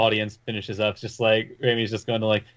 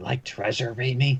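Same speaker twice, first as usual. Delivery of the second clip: quiet, hushed half-whispered voice with no tone. Game master voicing what the players hear, in a half-whispered, quiet voice. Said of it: "you hear it in an actually like whispered, quiet voice".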